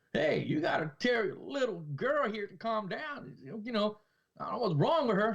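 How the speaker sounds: high put-on Southern drawl. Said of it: "Like a, a Southern accent".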